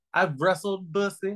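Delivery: drawling Southern twang. Saying the name of a wrestler faced before, in a Colonel Sanders voice. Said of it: "saying it like Colonel Sanders".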